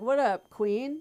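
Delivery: put-on young, slangy, casual chatter. Imitating how young people talk to each other: mock Gen Z talk. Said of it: "I love how you guys talk".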